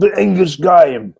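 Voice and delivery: bad put-on English accent. Podcast host introducing the next topic, in a horrible English accent. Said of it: "what a horrible English accent I just did there".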